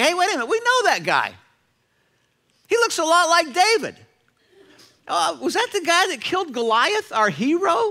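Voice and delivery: high, loud, excited accusing tone.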